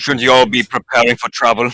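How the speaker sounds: put-on stern military officer voice. Voicing a character telling the others to prepare: stern commissar voice. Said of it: "he summons his inner commissar".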